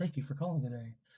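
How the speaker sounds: soft, courteous, polite professional customer-service voice. Showing how the speaker talks to callers at work, polite professional voice. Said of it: "professional voice".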